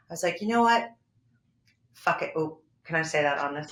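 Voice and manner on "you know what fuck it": mock done-with-it New York attitude, higher pitch. Retelling losing patience after a two-hour audition wait: retelling own terrible New York attitude. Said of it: "I had that New York terrible attitude".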